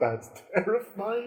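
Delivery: laughing while speaking. Voicing a character walking off still amused: chuckling while talking. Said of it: "you can still hear him chuckling".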